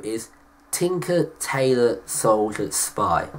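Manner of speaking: deliberately drawn out. Announcing third place in a personal film ranking: said very slowly. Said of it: "I'm going to say it very slowly".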